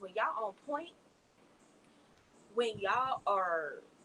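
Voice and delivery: loose, down-home country Southern accent. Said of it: "I sound so country right now".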